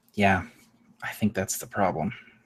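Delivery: low, half-swallowed mutter under the breath. Voicing a character after another walks past her: said under her breath. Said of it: "She kinda says under her breath".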